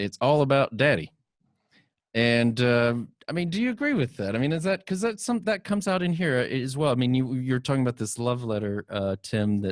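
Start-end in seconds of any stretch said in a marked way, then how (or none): 0.0-1.1 faux Southern accent, higher pitch. Quoting a man's answer from a panel, in a faux southern accent. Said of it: "in his best faux uh, Southern accent".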